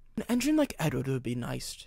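low-key, soft murmur under the breath. After a big engine breaks down, a man speaks, murmuring. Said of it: "he murmured".

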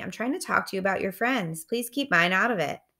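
ordinary delivery

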